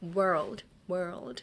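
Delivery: throaty English r in "world". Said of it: "that's the throat you wanna have".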